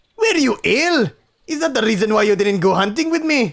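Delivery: put-on high, loud Scottish accent. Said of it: "Maybe I'll give him a Scottish accent".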